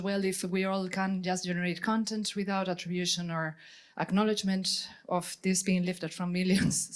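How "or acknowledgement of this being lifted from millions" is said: normal talking voice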